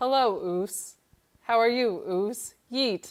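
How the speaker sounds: simple, elementary robotic game voice. Describing a simple video game's customized greetings, imitating a game robot voice. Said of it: "everybody's robot voices are like".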